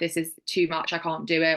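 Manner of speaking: ordinary talk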